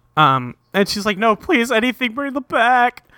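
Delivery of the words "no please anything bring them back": high, fake sobbing and crying. Retelling a cartoon character begging for her ruined scarves back: mock crying while pleading. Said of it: "Clover starts crying 'cause all her scarves got turned".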